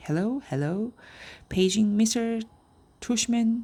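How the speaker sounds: put-on high-pitched elderly lady voice. Dad joking with his child about the school loudspeaker, in a fake high old lady voice. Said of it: "He was using a fake high old lady voice".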